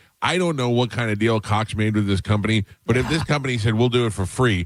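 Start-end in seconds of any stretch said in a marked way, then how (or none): none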